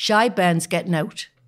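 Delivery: broad Newcastle Geordie accent. Showing another person how to say the phrase, Geordie accent. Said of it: "say it in Geordie".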